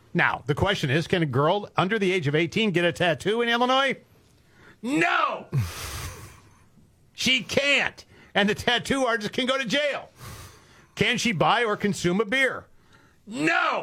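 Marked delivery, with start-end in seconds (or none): 4.8-13.8 high, shrill yelling, loud throughout. Lecturing on how Illinois treats minors, the speaker starts yelling. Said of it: "Why are you yelling?".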